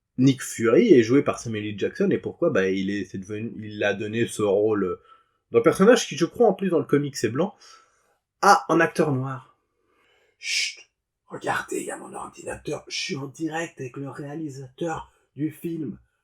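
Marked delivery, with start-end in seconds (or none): 10.4-16.0 very quiet whisper throughout, barely voiced. Speaker live on a call with the film's director, whispering. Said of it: "Je chuchote pour aucune raison".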